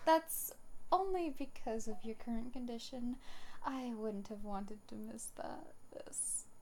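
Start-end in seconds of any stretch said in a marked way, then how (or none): 3.7-6.4 soft, half-whispered mutter under the breath. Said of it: "What'd you say?".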